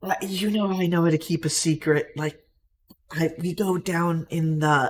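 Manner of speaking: put-on loud, drunk-sounding whisper. A game master voices a man leaning in to share a secret, in a drunk whisper. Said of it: "but like drunk whispers".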